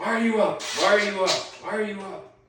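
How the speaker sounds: loud, very high, repeated screaming. Retelling a father catching a child awake: imitating a father screaming. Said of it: "he's cussing and screaming".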